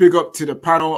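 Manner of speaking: normal talking voice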